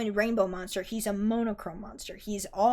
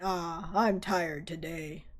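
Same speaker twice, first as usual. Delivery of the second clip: low, slow, derisive taunting mockery; 4 semitones lower than usual. Reading a story aloud, a character voicing his resting friend: low mocking tone. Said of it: "in a low, mocking tone".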